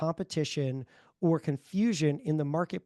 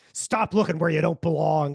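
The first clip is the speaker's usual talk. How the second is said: loud, sinister, menacing, threatening phone-like voice; 6 dB louder than usual. Retelling a phone call in a video, imitating a menacing voice. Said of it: "it's this like menacing voice".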